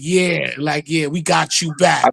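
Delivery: mock slow taunting through laughter. Retelling how they taunted the others back, imitating laughing while taunting. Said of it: "we used to be laughing like".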